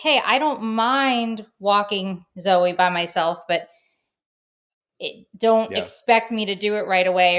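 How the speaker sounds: ordinary delivery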